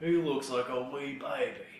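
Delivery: fake, put-on British accent. Teasing the other person, the speaker imitates their put-on british voice. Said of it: "your British voice".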